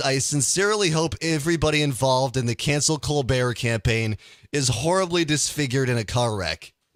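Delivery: ordinary talk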